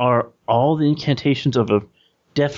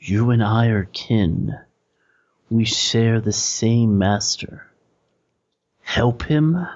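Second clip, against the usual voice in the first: distant, eerie stage whisper. Describing a voice that seems to come from very far away: distant half-whisper. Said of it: "the voice just kind of whispers to you".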